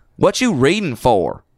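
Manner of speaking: folksy country waitress voice. Retelling a joke about a Waffle House waitress: imitating a country bumpkin waitress. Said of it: "the sort of country bumpkin waitress".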